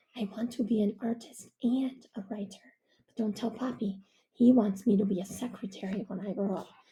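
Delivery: hushed, confiding half-whisper under the breath. Reading aloud a narrator confiding a secret to Baba: half-whispering. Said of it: "And in a whisper".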